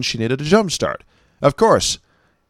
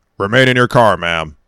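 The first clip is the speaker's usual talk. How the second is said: put-on stern cop voice, lower pitch; 3 semitones lower, 4 dB louder than usual. Retelling what a state trooper said to a woman, all stern and cop-like. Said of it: "he says all stern and cop-like to her".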